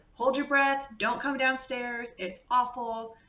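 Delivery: loud yelling. Speaker retells yelling up at him from downstairs, retelling a yell upstairs. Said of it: "yelling up at him".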